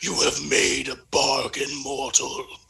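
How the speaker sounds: deep, resonant, echoing warlock voice. Casting thaumaturgy mid-game, speaking in character with a deep echoey voice. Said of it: "my voice gets all deep and echoey".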